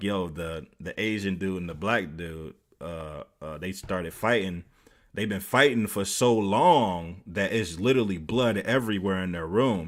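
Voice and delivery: ordinary talk, nothing marked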